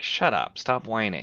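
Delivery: ordinary delivery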